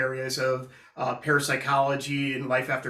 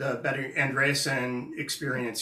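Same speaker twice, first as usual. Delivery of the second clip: ordinary talk, nothing marked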